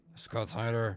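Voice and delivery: deliberately deepened, really low put-on voice. Showing the other speaker how to say the name: really low voice. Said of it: "do it really low".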